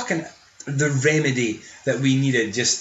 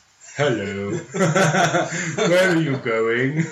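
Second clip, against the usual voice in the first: put-on posh old English gentleman voice, very slow; 2 semitones higher than usual. Joking about turning into an old gentleman: put-on old posh english gentleman voice. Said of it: "I'll mutate into an old posh English gentleman".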